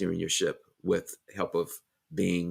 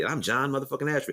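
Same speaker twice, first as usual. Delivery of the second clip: smooth, rock-solid delivery, pitched up; 8 semitones higher than usual. Saying own name as a confident declaration: Samuel L. Jackson voice. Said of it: "it's my Samuel L. Jackson voice".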